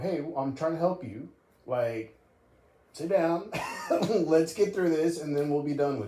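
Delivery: acted assertive, no-nonsense, firm yet respectful. Retelling how another speaker told someone to sit down: imitating an assertive, authoritative tone. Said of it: "assertive tone. Like, it's authoritative".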